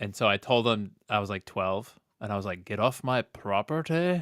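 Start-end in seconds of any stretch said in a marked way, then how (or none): 2.7-4.2 bad slow, tough put-on Scottish accent. Retelling ordering a bully off the property: bad tough Scottish accent. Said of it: "I tried to do a Scottish accent and all, all tough".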